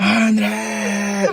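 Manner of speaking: mock screaming. Retelling a mother searching for her son outside: imitating mom screaming a name. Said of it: "literally screaming at the top of her lungs".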